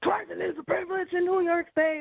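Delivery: play-acted, very high, shrill yell. Recounting being pulled over, imitating the police officer yelling at her. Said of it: "he just started yelling at me".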